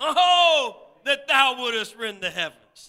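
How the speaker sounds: loud, high, heartfelt pleading cry, "oh" stretched. Explaining how a scripture verse should sound, acting out a plea. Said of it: "It's like a plea".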